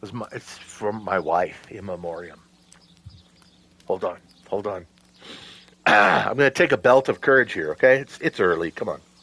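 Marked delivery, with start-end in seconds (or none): 0.0-4.8 very quiet, hushed, low, choked-up voice. Retelling a friend's answer about his tattoo, the speaker choking up. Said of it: "I'm getting I'm getting emotional".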